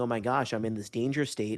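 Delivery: ordinary delivery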